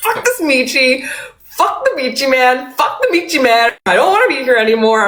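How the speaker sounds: high-pitched, fed-up, exasperated imploding outburst. Retelling giving up while cooking after repeated corrections: imitating own frustrated meltdown. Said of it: "just imploding".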